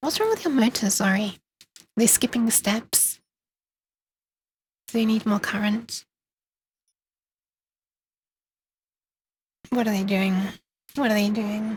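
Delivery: quiet, hushed voice. Asking about motors while others sleep nearby: speaking quietly. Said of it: "I'm just being quiet".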